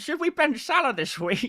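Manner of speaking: very high, grating, mocking voice. Speaker imitates an annoying chat commenter's question, in an annoying mocking voice. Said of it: "That's the voice I hear".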